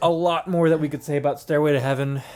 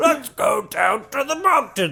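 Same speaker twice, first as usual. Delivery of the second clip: put-on dwarf voice, higher pitch; 8 semitones higher than usual. Joking about what a dwarf character would say: dwarf impression. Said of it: "Is this your, like, dwarf impression?".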